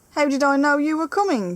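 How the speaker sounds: irritable. The pixie snaps at the lobster as they start to quarrel, cross. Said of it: "said the pixie crossly".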